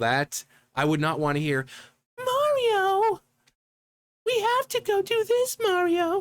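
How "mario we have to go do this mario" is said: put-on very high girly voice, word stretched out. Discussing why a game princess has no speaking role: girly Princess Peach voice. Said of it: "her voice is very, very girly".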